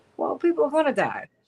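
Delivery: openly sarcastic tone. Quoting a senator's reply about people dying: imitating Joni Ernst's sarcasm. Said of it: "She said it sarcastically".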